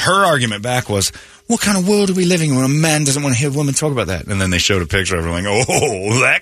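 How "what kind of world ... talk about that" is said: put-on over-refined, too posh London accent. Act out a woman's argument back about a man, in a too refined London accent. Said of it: "You're giving her the too refined London accent".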